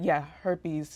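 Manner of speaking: ordinary talk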